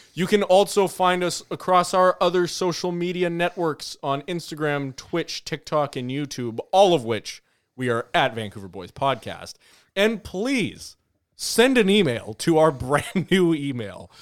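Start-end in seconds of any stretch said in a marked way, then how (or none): 10.0-14.1 talking while breaking into laughter. Podcast host reading the sign-off plugs, laughing while talking. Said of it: "Why are you laughing?".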